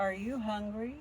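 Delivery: very soft, hushed voice. Retelling what was said to a wild animal face to face: speaking very softly. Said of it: "I talked very soft, just like that to him".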